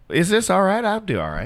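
Southern American accent, pitched high. Asked for a Minnesotan accent, offering the only one they can do, Southern accent. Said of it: "I can only do Southern".

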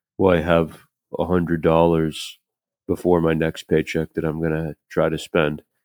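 mock slow, flat monotone delivery. Retelling what a man said about spending his paycheck, imitating a slow monotone. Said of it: "talked like this really slow and monotone".

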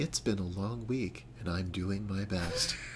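public radio announcer voice. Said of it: "our very best N P R voices".

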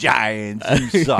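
put-on brash New York accent, put on thick. Imagining what we'd be saying if the game had gone our way, new york accent. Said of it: "but with that New York accent".

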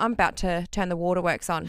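ordinary delivery

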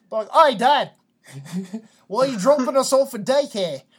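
thick put-on Australian accent, very loud, high. Joking about a child greeting dad at daycare drop-off, strong australian accent. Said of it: "a strong Australian accent".

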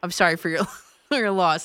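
put-on flat deadpan delivery. Praising a caller's phone calls, the host retells his ending, imitating a deadpan delivery. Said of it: "With the deadpan".

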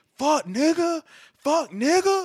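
put-on very high, shrill, dragged-out drunk holler. Describing a drunk girl on a bench arguing with two people, imitating her yelling. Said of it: "they yelling at each other".

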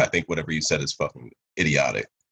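plain

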